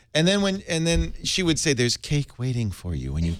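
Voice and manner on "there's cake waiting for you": put-on robotic AI voice. Retelling what the navigation voice said: GLaDOS voice. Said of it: "the best one, uh, though, was GLaDOS".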